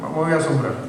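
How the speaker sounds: usual speaking voice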